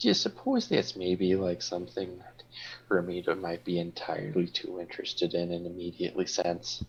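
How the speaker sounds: soft, hushed half-whisper under the breath. A player pulls a companion aside while another character is distracted, in a soft half-whisper. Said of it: "You were pretty soft".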